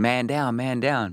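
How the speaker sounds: mock urgent screaming, slow. Retelling wrapping an injured man's leg and calling officers over: retelling screaming 'man down'. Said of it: "And I'm screaming".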